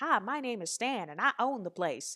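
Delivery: put-on southern accent of an old man. Retelling an old man introducing himself as the owner: Stan's southern accent. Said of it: "he had this southern accent".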